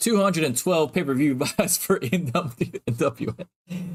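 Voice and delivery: slow speech, half-laughing, losing the straight face. Reading out a reported pay-per-view number, laughing while talking. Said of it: "I don't think I can even say this with a straight face".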